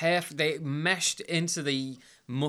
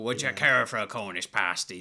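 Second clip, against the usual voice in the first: pirate accent; 5 semitones lower than usual. Showing the West Country pirate accent from the film: West Country pirate accent. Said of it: "there's a pirate accent and you stick with it".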